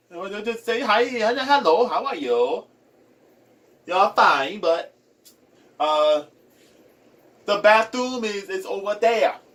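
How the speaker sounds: put-on sing-song Chinese accent in English. Describing accents from different languages, the speaker demonstrates a Chinese accent. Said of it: "the Chinese accent uh, would just say".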